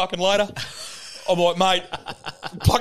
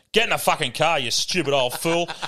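imitated, mock-cranky, snappy tone; 3 semitones lower than usual. Retelling what she said when he got in the car, imitating a cranky snap. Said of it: "She was so cranky".

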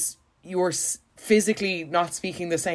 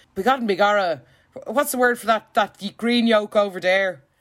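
over-the-top fake Irish brogue; 3 semitones higher, 5 dB louder than usual. Mocking an american who suddenly decides to be irish: exaggerated fake irish accent. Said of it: "putting on an Irish accent".

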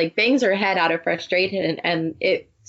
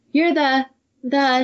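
put-on pitched-up, endearing European accent; 6 semitones higher than usual. Retelling a scene where Emily wakes and speaks, Emily's endearing European accent. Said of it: "She has a very endearing European accent".

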